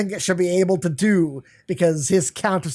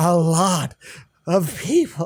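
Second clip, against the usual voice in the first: bad, slow, failed put-on seductive voice. Retelling an anime scene, voicing a character: put-on horny voice.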